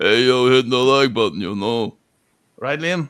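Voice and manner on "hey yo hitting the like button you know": slurred tough-guy voice, lower and louder. Joking about own voice, doing a Sly Stallone slurry voice. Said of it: "that sort of Sly Stallone slurry thing".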